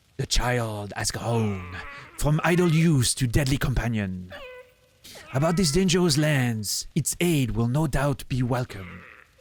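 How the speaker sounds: so-so, middling, put-on French accent. Speaker performs a character's line in a French accent. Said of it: "You need to work on your French accent".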